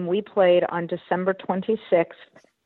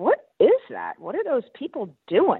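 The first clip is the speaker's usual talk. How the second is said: put-on baffled, incredulous, high, swooping disbelief; 5 semitones higher than usual. Retelling pointing out the window on the drive to the stadium, in a mock-incredulous tone. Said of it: "like I was incredulous that they even wanted to be outside".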